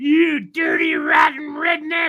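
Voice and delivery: very high, shrill, swooping, drawn-out screaming. Retelling how a driver's wife yelled from the car window, imitating her screaming. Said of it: "screaming at me".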